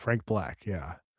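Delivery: ordinary delivery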